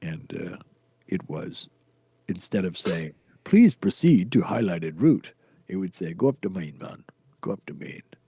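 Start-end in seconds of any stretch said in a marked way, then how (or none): 6.1-8.0 put-on Jamaican accent. Quoting what his programmed route guidance would say, in a Jamaican accent. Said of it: "a Jamaican accent thing".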